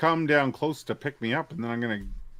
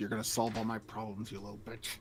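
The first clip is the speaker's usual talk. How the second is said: muttered under breath, much quieter and lower; 4 semitones lower, 11 dB quieter than usual. Talking to one's sword, as just described: muttered under breath. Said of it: "muttering under my breath to my sword".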